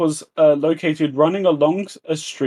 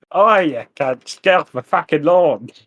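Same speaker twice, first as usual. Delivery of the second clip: clumsy put-on Australian accent attempt; 3 dB louder than usual. Joking with the others, in an attempted Australian accent. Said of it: "was that your attempted Australian accent?".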